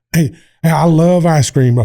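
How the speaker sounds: chuckling and laughing all the way through. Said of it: "I started giving him a laugh".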